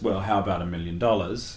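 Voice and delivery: ordinary talk, nothing marked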